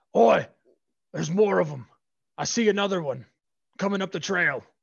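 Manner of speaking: very loud, high orc guard yell. Game master voicing a guard who spots newcomers on the trail; yelling orc guard. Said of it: "one of the orc guards yells".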